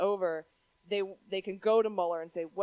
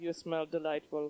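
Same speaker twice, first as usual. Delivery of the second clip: fake Russian accent, lower and quieter; 4 semitones lower, 5 dB quieter than usual. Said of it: "do Fabrizio in a Russian accent".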